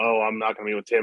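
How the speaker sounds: usual speaking voice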